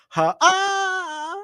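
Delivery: high, far-off sounding squealing laugh. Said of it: "how would you imagine someone laughing like that in real life".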